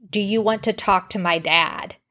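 plain

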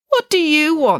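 very high, wary. Narrator reading a woman's question to the newly arrived kings, suspicious. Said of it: "asked Udit Piggins suspiciously".

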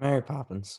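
downcast, gloomy, glum and depressed tone. Naming a pick in a movie vote: depressed-sounding. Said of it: "why are you so depressed all of a sudden".

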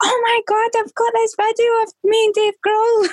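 very high-pitched scream, acted out. Recalling driving back into Glasgow, imitating Chloe screaming. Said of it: "Chloe's screaming like".

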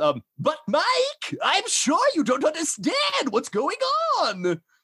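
very high, swooping, cartoonish silly old man voice. Speaker recalls the voices a former dungeon master did: over-the-top old man voice. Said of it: "so they're like old man voices".

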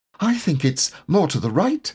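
anxious, worried tone. A narrator reads a storybook character's line, nervous. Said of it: "said Piglet nervously".

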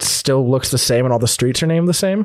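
plain

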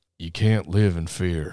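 low, hushed, quiet, deep Southern drawl. Imitating a man looking in the mirror, quiet, deep Southern voice. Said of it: "It's just like this deep Southern voice".

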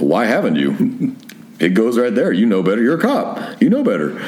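ordinary delivery

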